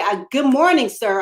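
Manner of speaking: put-on loud big girl voice. Retelling greeting an officer who ignored earlier greetings: retelling a loud greeting. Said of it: "I had to get loud".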